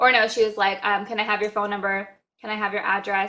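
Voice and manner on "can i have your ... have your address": mock flat monotone voice. Retelling what a customer service worker asked on the phone: imitating a monotone voice. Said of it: "Very just monotone".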